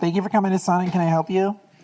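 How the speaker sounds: put-on girly voice, high. Trying out a voice as a worker taking orders, Sonic drive-thru girl voice. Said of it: "that's a Sonic girl voice".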